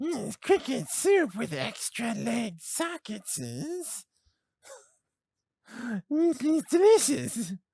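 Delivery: very high-pitched, eerie, creepy monster voice. Podcast host demonstrating a creepy voice: creepy monstrous voice. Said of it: "Starts to sound like creepy, monstrous stuff".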